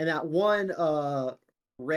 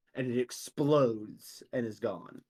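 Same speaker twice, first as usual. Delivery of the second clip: ordinary delivery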